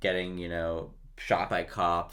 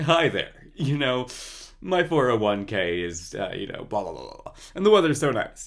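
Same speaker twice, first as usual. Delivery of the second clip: loud, sing-song, heavily exaggerated voice laid on thick; 4 semitones higher, 6 dB louder than usual.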